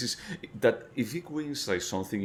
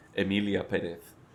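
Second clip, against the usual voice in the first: full, strong Spanish accent. Asked to say the titular character's name, giving it a full Spanish accent. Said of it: "with full Spanish accent".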